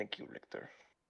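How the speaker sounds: hushed whisper, barely voiced, very quiet. Speaking in character to thank another character: whispering.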